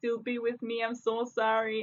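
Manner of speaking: soft, pleading, begging voice. Talking about men who cheat and get caught, imitating a man begging. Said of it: "they're like begging and pleading and say".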